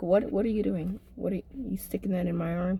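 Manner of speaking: mock nosy, annoying tone. Retelling getting stuck with a needle while watching closely: acting like an annoying onlooker. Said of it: "I'm like that annoying person over your shoulder".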